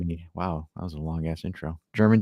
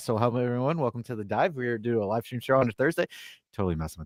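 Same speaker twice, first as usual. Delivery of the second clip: high, very fast race-announcer patter; 5 semitones higher than usual. Opening a live stream show and greeting everyone: talking very fast like a race announcer. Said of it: "I am sounding like a Kentucky Derby announcer because I'm going so fast".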